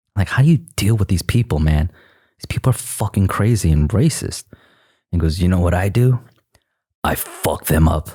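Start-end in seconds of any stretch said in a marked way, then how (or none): 5.4-8.1 put-on raspy man's voice, slower. Retelling a talk with a longtime local, the speaker quotes his reply: raspy voice impression. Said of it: "He has a really raspy voice".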